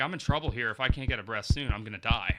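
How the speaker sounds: plain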